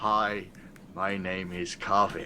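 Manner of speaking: muttering under breath. A character introduces themselves hoping nobody behind hears, muttering under breath. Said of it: "under my breath".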